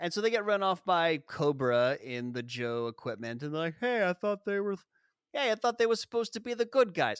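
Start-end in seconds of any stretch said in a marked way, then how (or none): 3.8-7.2 put-on New Jersey accent, pitched up throughout. Retelling truck drivers' complaint about the Joes: imitating a Jersey accent. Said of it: "basically that accent".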